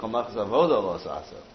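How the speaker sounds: ordinary delivery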